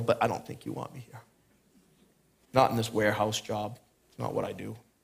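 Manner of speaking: put-on giggly voice. Retelling a prayer before a job interview: retelling a giggly remark. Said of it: "And I kinda giggled and go".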